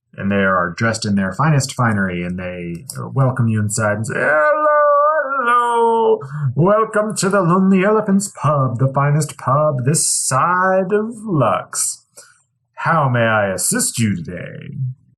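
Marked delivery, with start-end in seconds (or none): 4.2-14.8 very high, cheery, jovial, swooping bartender voice. Narrator voicing the human bartender welcoming you into the pub, in a jovial bartender voice. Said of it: "You're greeted by a very jovial bartender".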